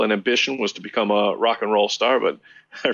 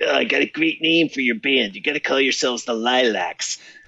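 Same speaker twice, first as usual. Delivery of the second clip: put-on Chicago accent; 3 semitones higher than usual. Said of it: "I'll imitate his chicago accent for you".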